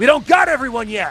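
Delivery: very high, loud, in-character holler. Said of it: "And he's gonna yell".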